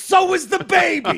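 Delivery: high, loud, slow mock shout. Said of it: "He goes".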